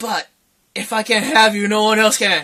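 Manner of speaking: ordinary delivery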